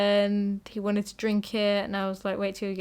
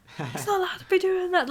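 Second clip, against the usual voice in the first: play-acted, very high-pitched shouting; 10 semitones higher than usual. Retelling what a lifeguard at the swimming pool said: imitating a lifeguard shouting. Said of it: "shouting at me".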